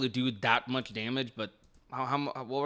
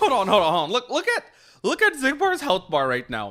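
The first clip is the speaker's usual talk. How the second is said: excited scream, high and very loud; 8 semitones higher, 6 dB louder than usual. Commentating a fight, pointing out the health bar: screaming into the mic. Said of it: "Sorry if I'm screaming in the mic".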